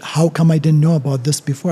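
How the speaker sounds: ordinary talk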